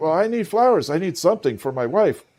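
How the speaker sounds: put-on panicked man's voice. Retelling a man at a sold-out Valentine's flower seller, imitating a panicked man. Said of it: "he was like in total panic".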